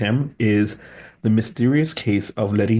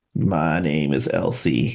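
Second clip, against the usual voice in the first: put-on transatlantic Southern lady accent, much lower; 6 semitones lower than usual. Asked to do the voice, the speaker introduces a character in a transatlantic southern lady accent. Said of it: "please do the transatlantic Southern lady".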